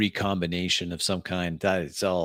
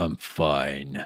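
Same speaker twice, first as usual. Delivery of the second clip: dropped, low voice with fine drawn out; 5 semitones lower than usual. Asked if he's all right, a roleplayed character answers in a low voice. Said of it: "Low voice".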